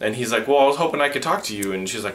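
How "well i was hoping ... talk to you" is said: stuck-up, superior, snobby, haughty tone. Retelling a scene from a show: imitating a snobby tone. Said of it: "he's all snobby-like".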